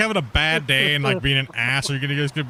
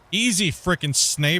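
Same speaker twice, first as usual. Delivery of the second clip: usual speaking voice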